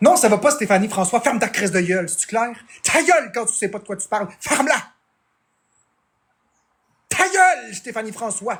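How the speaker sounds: seething, furious, genuinely angry tone. Trying and failing to calm down, really angry. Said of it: "Je suis vraiment fâché".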